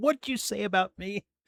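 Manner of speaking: mock pissed-off tone. Voicing the lawyer on screen as he looks pissed: imitating a pissed-off Dershowitz. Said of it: "Dershowitz's face of, uh, fucking pissed".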